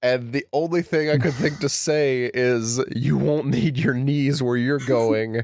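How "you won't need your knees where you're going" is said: rough, ugly, strained, choked raspy voice. Retelling being choked during a fight: retelling a raspy, awful voice. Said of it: "raspy, awful voice".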